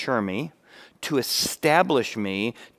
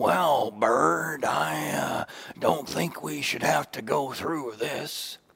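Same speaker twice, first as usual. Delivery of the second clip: put-on, muppet-like creature voice; 3 semitones higher than usual. Speaker illustrating how a victim's inner voice might sound, doing a Snuffleupagus voice. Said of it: "maybe it sounds a little bit like Snuffleupagus".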